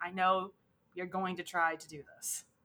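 plain

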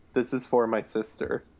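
grave, earnest, very solemn and serious delivery. Retelling a movie scene where a kid at a talent show speaks: imitating a solemn, serious tone. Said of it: "very solemnly, very seriously goes".

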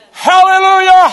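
shouting it out excitedly. Speaker showing listeners how the word was intended to be said, excited shout. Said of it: "You shout it out".

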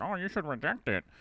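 high, croaky, terrible frog voice. Retelling what a teacher said, in the teacher's terrible frog voice. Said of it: "with her terrible frog voice".

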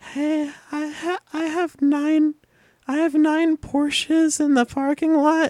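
put-on very high, slow little-kid voice. Retelling a prank call received at the bowling alley: imitating a seven-year-old's voice. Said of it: "it sounded like it was this seven-year-old".

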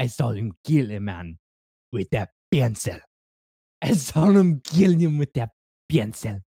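put-on Russian accent. Quoting a line from the film John Wick, in a Russian accent. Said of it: "The one I'm doing is the Russian".

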